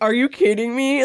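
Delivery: irritated, fed-up, mad and annoyed tone. Describing a favorite Santa performance, quote his Santa: mock-mad Santa impression. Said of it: "gets so mad and like annoyed".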